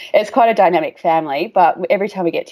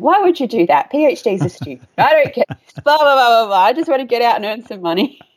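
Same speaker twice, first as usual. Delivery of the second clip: scoffing, dismissive brush-off, pitched up; 6 semitones higher than usual. Recalling brushing off his suggestion to do a PhD, retelling a scoff. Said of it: "I scoffed at him going".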